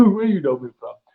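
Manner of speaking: plain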